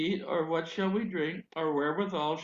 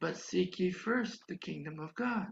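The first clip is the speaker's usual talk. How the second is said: soft, quiet, small little voice; 4 dB quieter than usual. Preacher recounting the inner voice that kept answering his prayer: quiet little voice. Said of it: "this quiet little voice kept saying".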